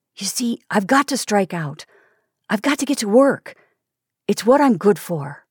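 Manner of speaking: put-on charged with eager, boyish earnestness. Seth, speaking on to a listener, now with boyish eagerness. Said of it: "Seth's voice became charged with boyish eagerness".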